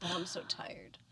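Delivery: soft, tired, whispered voice.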